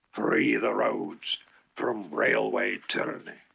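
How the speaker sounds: fierce, low, rough, rasping growl. Narrator reads a bus ranting against the railways; growled. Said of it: "he growled".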